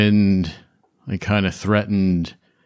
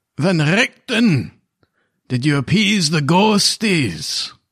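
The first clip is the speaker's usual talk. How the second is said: pitched-up dwarf character voice, ghostly; 8 semitones higher than usual. A game master voices a ghostly dwarf addressing the players, in a dwarven voice. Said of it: "You hear a dwarven voice say".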